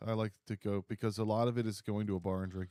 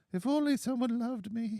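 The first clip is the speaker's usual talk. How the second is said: put-on grandmother voice, higher-pitched and louder; 14 semitones higher, 5 dB louder than usual.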